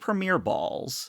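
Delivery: ordinary talk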